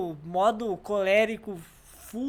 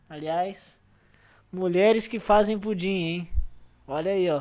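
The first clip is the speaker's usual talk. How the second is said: ordinary talk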